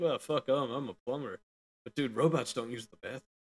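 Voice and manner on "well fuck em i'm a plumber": cocky, smug, self-satisfied aside. Retelling an earlier thought about being a plumber: imitating own smug thought. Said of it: "kinda smugly".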